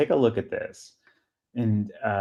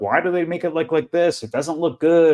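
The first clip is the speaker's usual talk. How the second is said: mock scornful, clueless tone, pitched up; 7 semitones higher than usual. Retelling what uneducated auction commenters said, mocking commenters' voice. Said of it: "the uneducated were like".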